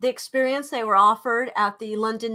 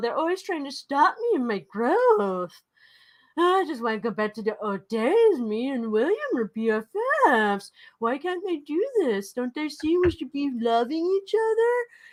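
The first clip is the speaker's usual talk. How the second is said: mocking, dim-witted put-on voice, pitched higher; 4 semitones higher than usual. Imitating a man annoyed about an event: mocking dumb voice. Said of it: "He talks like a dummy".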